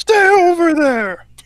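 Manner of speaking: loud, drawn-out high scream.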